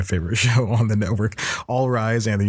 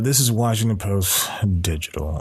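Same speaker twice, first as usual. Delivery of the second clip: mock mournful voice, dejected, sad and deflated. Retelling a movie scene where a reporter stands up: imitating a sad reporter. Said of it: "really sad about it".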